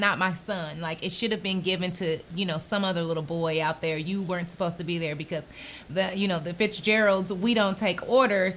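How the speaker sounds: ordinary delivery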